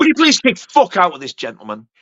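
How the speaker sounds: usual speaking voice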